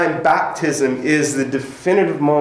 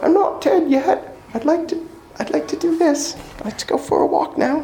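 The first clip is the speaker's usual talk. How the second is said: bad fake British accent, much higher pitch; 14 semitones higher than usual. Speaker quotes someone mid-talk, in a bad british accent. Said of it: "That's a really bad British accent".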